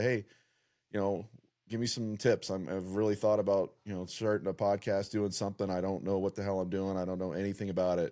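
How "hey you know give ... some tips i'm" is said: usual speaking voice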